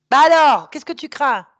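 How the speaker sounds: very loud, full-throated shouting. Scolding someone who is afraid to look at a demon: shouting. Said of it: "tu cries".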